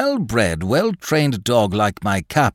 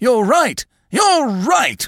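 very high, eager, excited outburst; 14 semitones higher, 4 dB louder than usual. Mr. Craven springs from his chair, agreeing with Loveday, crying out excitedly. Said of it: "cried Mr. Craven, springing up excitedly".

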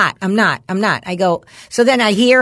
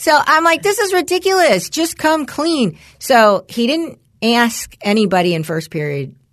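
plain

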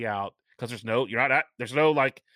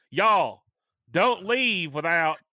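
put-on Southern American accent on y'all, pitched up; 5 semitones higher than usual. Repeating a reminder to resort guests, the speaker now says it in a southern accent. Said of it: "we say it with a southern accent this time".

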